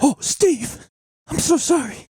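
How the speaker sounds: acted frightened voice, very high, terrified. Picturing Steve's ghost at Apple headquarters, play a mock-terrified Tim Cook apology. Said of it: "Tim Cook would be quaking in his boots".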